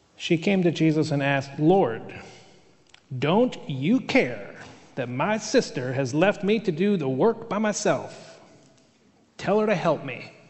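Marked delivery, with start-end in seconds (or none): none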